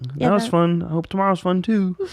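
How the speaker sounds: very high cartoon frog puppet voice. Describing going back to his room alone after shows, he uses a Kermit the Frog voice. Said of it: "Was that a Kermit the Frog voice?".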